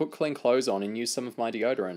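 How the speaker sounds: usual speaking voice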